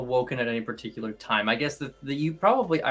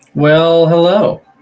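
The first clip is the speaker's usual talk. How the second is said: speaking loudly, higher in pitch and louder; 6 semitones higher, 16 dB louder than usual. Greeting the others as the session resumes: loud voice. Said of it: "Oh, you're loud".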